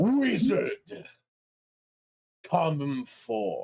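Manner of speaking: resounding, booming call swooping up high. Narrating the scene as Garf's conversation with Nimmer ends: booming voice. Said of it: "A booming voice".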